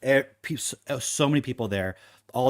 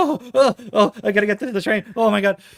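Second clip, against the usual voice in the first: very high, loud, breathless out-of-breath gasping; 10 semitones higher, 7 dB louder than usual. Imitating a train fan in a video: imitating someone catching his breath. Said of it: "catching his breath".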